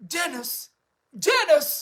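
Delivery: slow, stiff-lipped, top lip kept frozen. Imagining a line Thatcher might have said: Thatcher impression. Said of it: "I don't know if she said that".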